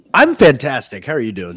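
loud, near-scream, almost screamed. Asked by the host how he is doing, [name] answers, almost screaming. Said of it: "It sounded more like you just kind of screamed".

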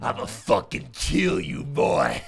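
slow, rough, threatening, menacing voice. Retelling how a man threatened him through a dog cage: imitating a scary dad. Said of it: "Scary dad".

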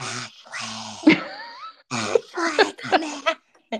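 very slow, high, drawn-out loud stage whisper. Retelling a scene where a character calls someone from the doorway: retelling a loud whisper. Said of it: "does the loud whisper".

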